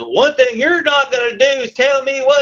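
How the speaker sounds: put-on yell. Retelling a customer's angry reply: imitating someone yelling. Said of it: "this guy yells at me and says".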